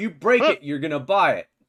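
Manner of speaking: shouting. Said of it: "you hear a shout from behind you".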